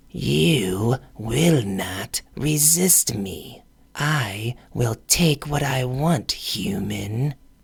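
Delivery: low, hissing, sibilant voice. Narrator voicing a woman pinning a human against a rock: low, sibilant hiss. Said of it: "hissed in a low, sibilant voice".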